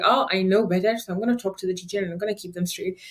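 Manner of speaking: plain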